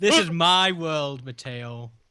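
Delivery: menacing, threatening tone. Playing a character in a dream world, speaking to another player: menacing. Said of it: "why do you sound so menacing?".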